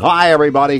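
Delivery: strained, pushed, forced voice. Showing what not to do with your voice: pushed, forced voice. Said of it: "We don't want to be pushing our voice like".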